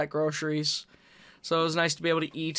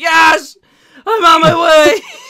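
very loud, very high, drawn-out shriek; 12 semitones higher, 16 dB louder than usual. Told her lost wallet was found, speaker re-enacts her phone reply, retelling a scream into the phone. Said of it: "I literally scream into the phone".

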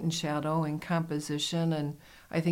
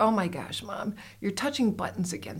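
put-on teasing laugh, higher pitch; 4 semitones higher than usual. Retelling how a daughter laughs at her phone use: imitating daughter laughing at her. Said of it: "my daughter laughs at me and she's like".

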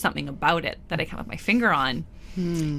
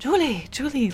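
put-on Persian accent, pitched up; 8 semitones higher than usual. Telling a story about a chef in a shared kitchen, imitating his persian accent. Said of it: "like a persian accent".

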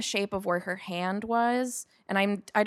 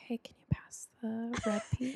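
soft, hushed, gentle whisper; 8 dB quieter than usual. Retelling how they talked in the quiet cabin: imitating a whisper. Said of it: "And we just started whispering".

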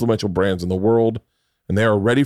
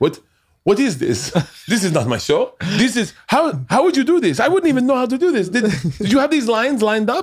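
put-on French accent, very high-pitched and incredulous; 12 semitones higher than usual. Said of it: "he's French accent".

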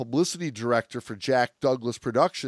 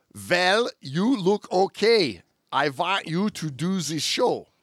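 put-on heavy, thick Hungarian accent, laid on, pitched higher; 5 semitones higher than usual. Retelling what Ivan said to a woman he met about a new show, in Ivan's very thick Hungarian accent. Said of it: "in his very thick Hungarian accent".

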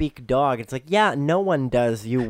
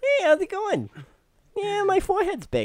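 very high chatter, pitch swooping way up and around. Joking that they hired a cheaper comedian: Jay Leno impression. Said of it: "so we got Jay Leno instead".

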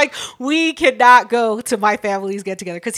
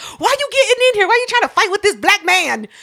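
play-acted furious, shrill, very high, rushed yell; 10 semitones higher than usual. Speaker retells what they shouted at a family get-together, retelling a yell. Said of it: "I'm yelling".

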